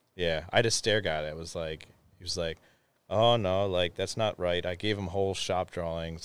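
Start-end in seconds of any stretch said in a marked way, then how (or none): 3.1-4.7 put-on man's voice with a Pennsylvania Dutch accent.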